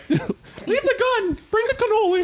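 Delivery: cartoon mouse voice pitched very high. Imagining a movie dubbed by cartoon voices, doing a Mickey Mouse voice. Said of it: "Like Mickey Mouse being like".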